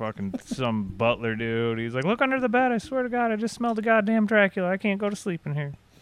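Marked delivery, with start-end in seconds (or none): 2.0-5.7 put-on very high, fast, shrill kid-style yelling. Retelling how someone pretending to be a kid shouted at a butler, retelling a yell. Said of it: "he was like yelling at".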